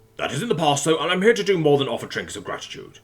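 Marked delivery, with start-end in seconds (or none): none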